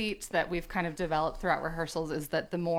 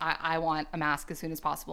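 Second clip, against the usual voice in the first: ordinary talk, nothing marked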